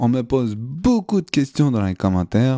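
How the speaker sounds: bad mock Québécois accent with swooping pitch.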